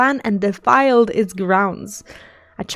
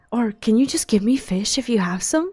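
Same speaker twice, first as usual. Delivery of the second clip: quieter, lowered whisper; 4 dB quieter than usual. Reading a game quest's character line aloud, whispering. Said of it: "again lowers his voice to a whisper".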